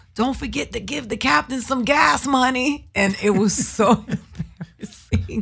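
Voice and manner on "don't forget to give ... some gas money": put-on, called-out wisecracking shout. Retelling how his comedian friend yelled as he pulled off at the airport, imitating the yell. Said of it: "he yells out".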